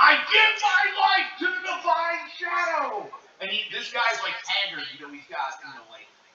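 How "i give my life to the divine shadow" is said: acted, very high, slow, drawn-out fanatical shriek. Voicing a cleric on a screen in a vision: screaming cleric. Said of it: "a cleric's just screaming".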